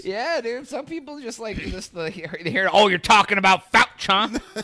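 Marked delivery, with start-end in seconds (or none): 2.7-4.6 loud, mock-scornful, sneering, contemptuous tone. Imitating how some people say the name with disdain: imitating disdainful tone. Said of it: "The disdain in a person's voice".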